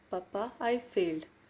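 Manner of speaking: mock scared, very fearful voice. Retelling what she said to her dad on coming home, in a fearful tone. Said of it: "I said in a very fearful tone".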